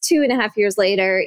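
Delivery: ordinary talk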